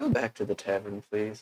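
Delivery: whispering. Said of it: "I'm gonna whisper to him".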